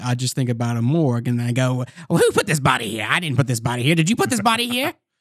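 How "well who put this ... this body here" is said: pitch swinging all over. Speaker explains how they get into a character, then does Doc Orvidi voice. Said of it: "whenever I wanted to do Doc Orvidi".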